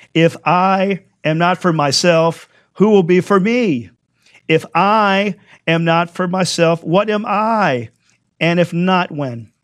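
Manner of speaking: I and myself emphasized. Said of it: "I'm gonna emphasize some things in here".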